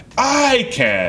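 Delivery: the word "I" leaned on gladly. Comparing how people say I can and I can't: stress on I. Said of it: "I'm happily saying it, and I'm also stressing the I".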